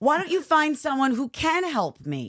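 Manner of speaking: mock passive-aggressive tone. Acting out a call with a helper: mock passive-aggressive tone. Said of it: "Very passive aggressively, like".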